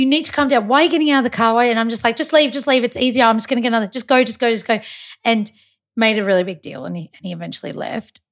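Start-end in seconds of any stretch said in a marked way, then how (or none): 0.0-1.6 put-on yelling, higher. Recounting how the man who pulled over yelled at her, retelling a yell. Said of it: "he was like yelling".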